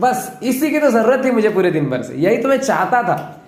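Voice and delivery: wide-ranging, mock-pleased sarcastic tone.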